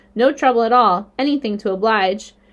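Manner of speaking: plain reading voice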